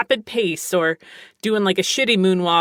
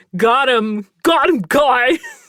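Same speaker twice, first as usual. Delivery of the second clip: smug, loud, drawn-out dude-bro swagger; 5 semitones higher, 5 dB louder than usual. Mimicking a certain type of guy, put-on guy voice. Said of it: "that's just a voice I do".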